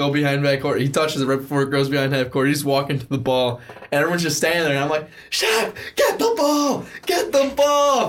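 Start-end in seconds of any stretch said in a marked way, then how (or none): 5.3-8.1 mock very high, stretched-out, drawn-out shriek. Recounting a basketball game, retelling a scream at a player. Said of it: "Like everyone's screaming at him".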